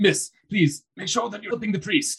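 high, loud, called-out shout. A character calls across to another, urging her to help the priest, shouting. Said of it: "Rictavio shouts to Pebble".

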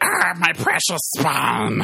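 sing-song, drawn-out creature voice with swinging pitch. Imitating Gollum being broken over Bane's knee: Gollum voice. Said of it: "and he'd be like".

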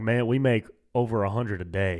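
put-on, imitated Southern drawl. Retelling a conversation with an older couple, quoting the husband in a southern drawl. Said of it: "they had that like Southern drawl".

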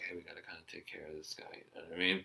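whispered, very quiet. Retelling what the boyfriend and girlfriend said in the cab: imitating whispering.

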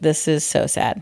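usual speaking voice

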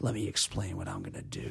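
calm, hushed, barely above a whisper. Contrasting a wrestler with the screamers: Jake the Snake Roberts calm talk. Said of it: "He would just talk calmly".

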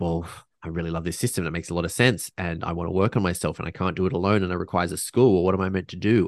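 plain

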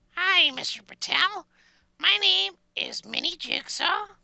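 small, strange little voice. A call-in show caller introduces himself to Mr. Patel, strange Mini Jigsaw voice. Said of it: "you have a strange voice, little person".

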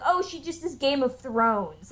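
usual speaking voice

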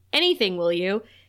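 normal talking voice

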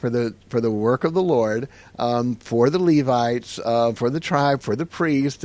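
ordinary talk, nothing marked

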